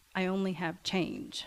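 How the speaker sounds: mock quiet, soft voice. Retelling what a shy young man said at the counter: imitating a quiet voice. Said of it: "really quietly".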